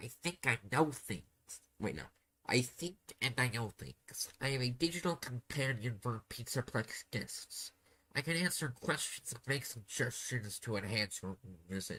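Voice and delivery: rough-edged, helpful, informative put-on pig voice. Narrating a story where the listener asks the digital companion a question, VIP the pig voice. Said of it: "the rough voice I, I will go with for very informative pig".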